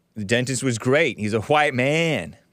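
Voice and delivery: plain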